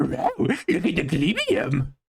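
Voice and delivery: slow, drawn-out dog voice swooping up and down. Quoting what a character says in a game: Scooby-Doo voice. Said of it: "He goes".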